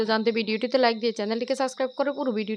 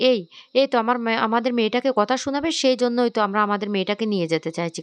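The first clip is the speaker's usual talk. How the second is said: ordinary delivery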